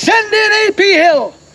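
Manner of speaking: shouted voice. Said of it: "He'll start shouting out battle orders".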